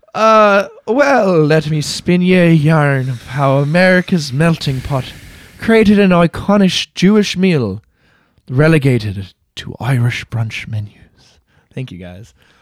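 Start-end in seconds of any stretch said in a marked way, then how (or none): 0.1-10.9 slow, fake Irish accent in yarn-spinning storytelling style. Launching into a story for the others, in a put-on Irish accent. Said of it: "when I also did an Irish accent".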